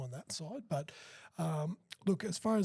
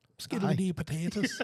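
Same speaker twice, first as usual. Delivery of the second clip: loud put-on Irish accent, a best attempt; 2 semitones higher, 5 dB louder than usual. Asked by a host for his best Irish accent, put-on Irish accent. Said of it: "Give us your best Irish accent".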